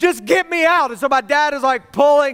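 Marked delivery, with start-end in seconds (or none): 0.0-0.9 high, frantic, panicked voice, crying through tears. Retelling being pulled out from under a bed by dad, retelling a screaming, crying plea. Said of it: "I'm screaming and I'm crying".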